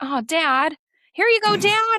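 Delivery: very high-pitched put-on voice, climbing upward. Telling another speaker how someone said it, in a high-pitched imitation of him. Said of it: "You definitely put a high-pitched tone in that voice".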